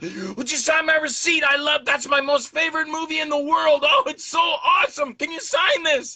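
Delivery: mock very high, gushing, starstruck excited fan squeal. Retelling how a man who loves the speaker's movie reacted, imitating excited screaming. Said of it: "And he's screaming".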